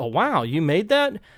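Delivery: amazed, admiring, awed wonder. Example compliment on someone's costume, amazed and admiring. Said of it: "That is a show of wonder".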